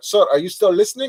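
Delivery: put-on Indian accent. Retelling a sales call, quoting the lady on the line, imitating an Indian accent. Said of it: "this Indian lady goes like".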